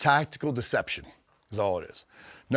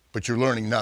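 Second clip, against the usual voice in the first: ordinary talk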